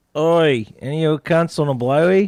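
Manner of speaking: put-on Australian accent, loud and high.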